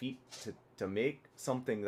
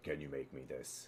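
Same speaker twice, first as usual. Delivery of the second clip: very low, deep, very soft, hushed put-on voice; 10 semitones lower, 11 dB quieter than usual. Showing how you ask him to make what you visualize, in a deep voice. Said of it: "like in your deep voice".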